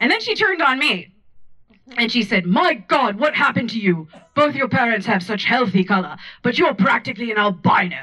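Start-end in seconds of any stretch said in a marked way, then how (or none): 2.5-8.0 acted old-fashioned voice. Retelling a dinner visit, speaker quotes Charlotte, imitating Charlotte's old-timey voice. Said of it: "She has an old-timey voice".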